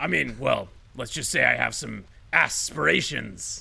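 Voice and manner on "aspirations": heavy stress on first syllable ass in aspirations. On a comedy podcast, asked about getting political, stressing 'ass' in aspirations. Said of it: "Why did you emphasize the ass?".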